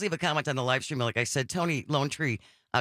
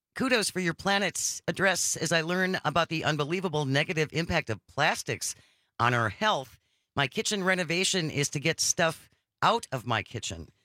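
normal talking voice

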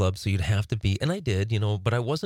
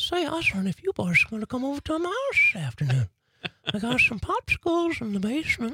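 creepy cartoon voice, much higher. Discussing creepy cartoon voices, quoting Herbert the Pervert, creepy Herbert the Pervert voice. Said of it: "the creepiest voice on cartoons".

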